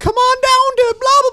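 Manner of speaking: high, loud mocking voice.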